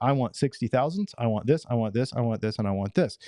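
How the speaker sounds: usual speaking voice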